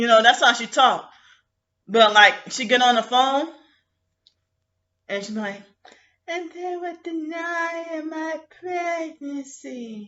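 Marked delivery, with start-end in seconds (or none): 6.3-10.1 put-on hushed, very quiet, soft little-girl voice. Retelling how a woman talks on the phone, the speaker does her soft little-girl voice. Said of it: "trying to sound like a soft little little girl".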